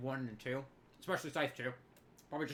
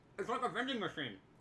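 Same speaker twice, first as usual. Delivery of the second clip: talking through a mouthful of food, pitched up; 6 semitones higher than usual. Still eating, the speaker says this before repeating it, talking with mouth full. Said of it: "let me say that again without my mouth full of meat".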